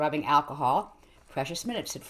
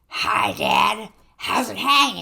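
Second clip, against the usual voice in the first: put-on high, loud, rough, creaky wheezing monster voice; 6 semitones higher, 7 dB louder than usual. Reading a story aloud, the polyp speaks to Vincent, wheezing. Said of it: "the polyp wheezed".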